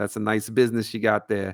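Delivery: put-on mafia voice, New York accent. Podcast host repeating a line he said earlier, in a New York mafia voice. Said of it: "New York uh, mafia voice".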